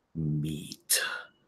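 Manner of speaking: heavy, very low, hushed bass monster voice. Narrating a spiky comic-book-style creature looking at the group, heavy bass creature voice. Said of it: "you just hear this like heavy bass voice just go".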